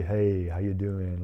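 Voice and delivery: deep flat monotone. Showing how he normally greets people, in a deep flat monotone. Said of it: "I got a deep voice and I'm pretty monotone".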